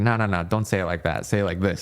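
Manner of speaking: normal talking voice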